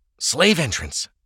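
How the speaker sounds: hissed. Franz, hearing a latch open, hisses to Ava: hissed. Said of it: "Franz hissed".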